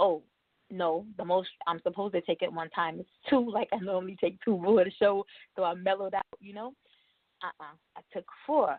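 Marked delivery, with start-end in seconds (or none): none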